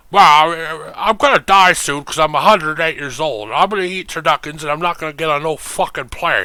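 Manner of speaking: sportscaster voice with long drawn-out "well". After mocking Madden's refusal to fly, speaker plays Madden: John Madden impression. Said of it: "thank you, John Madden".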